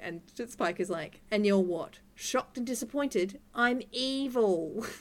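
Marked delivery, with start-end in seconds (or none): 1.3-4.8 character voice with the word evil drawn out. Quoting a TV character's line for the others: Spike impression. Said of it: "I like your take on the character".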